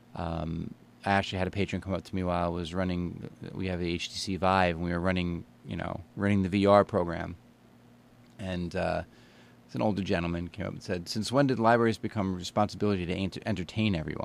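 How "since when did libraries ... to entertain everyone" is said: ordinary talk, nothing marked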